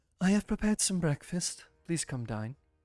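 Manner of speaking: calm, gentle woman's voice. Narrating a scene, a voice from the attic hatch calls down: soothing female voice. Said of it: "a soothing female voice that announces".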